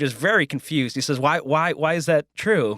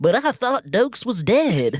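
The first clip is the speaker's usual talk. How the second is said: put-on, pitched-up Southern American accent; 8 semitones higher than usual. Describing a courtroom surprise witness, someone in the courtroom reacts in a southern accent. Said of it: "somebody in a southern accent goes".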